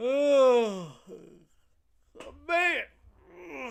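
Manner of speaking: very loud, high yawning oh, stretched long. A streamer chatting with viewers, tired from staying up late: yawning. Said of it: "sorry, I'm yawning".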